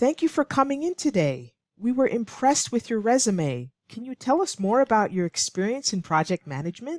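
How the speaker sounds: friendly, smiling tone. Reading an interviewer's line in an English lesson: smiling tone. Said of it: "that's how she's likely saying it with a smiling tone".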